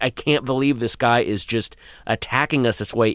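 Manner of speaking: usual speaking voice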